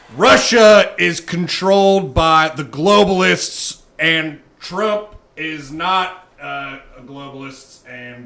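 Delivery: very loud, booming, deliberate, high, drawn-out proclamation. Answering an interview question in an Alex Jones impression. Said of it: "Alex, what do you think about Russia?".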